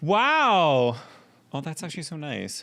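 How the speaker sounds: loud, high, animated yelling, long drawn-out "wow". Hearing a compliment from the other speaker: yelling. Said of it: "stop yelling".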